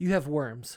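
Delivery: put-on flat deadpan delivery. Retelling how she looked at the speaker and answered, imitating a deadpan delivery. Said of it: "she deadpan just looks at me and goes".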